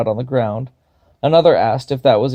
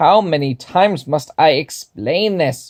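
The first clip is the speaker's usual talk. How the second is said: slow, high-pitched, angry voice; 4 semitones higher than usual. Narrator reading a story, voicing the kobold Wolfred in a high, angry voice. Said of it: "the kobold declared, / [name] asked. / a voice high and angry".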